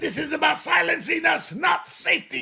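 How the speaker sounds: very high, harsh soldier voice. Quoting a student protester's statement: Nazi-esque soldier voice. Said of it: "I love talking like that Nazi-esque soldier".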